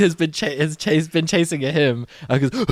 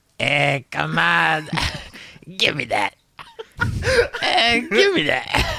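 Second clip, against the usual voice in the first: aggressive, forceful goblin voice, pitch swinging widely. Voicing the goblin Bick demanding from a player, aggressive. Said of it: "You're a little bit aggressive".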